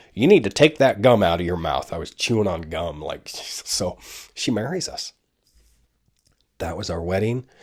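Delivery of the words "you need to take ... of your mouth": put-on Southern accent, louder and faster. Retelling what the woman who married them said to him, imitating a southern accent. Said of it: "She had a southern accent".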